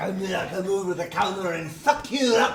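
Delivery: attempted Irish accent. Defending his impression of the fighter's threat: Conor McGregor Irish accent. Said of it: "it's fucking Irish".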